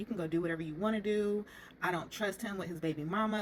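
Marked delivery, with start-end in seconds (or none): none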